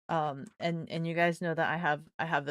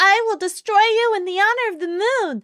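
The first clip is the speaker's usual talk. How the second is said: put-on squeaky, very high, loud anime girl voice; 12 dB louder than usual. Explaining that anime girls sound high-pitched, the speaker imitates one: high-pitched anime girl voice. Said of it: "they're so high pitched".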